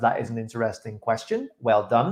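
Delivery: ordinary delivery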